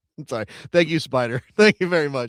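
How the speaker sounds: giggling, laughing through the words.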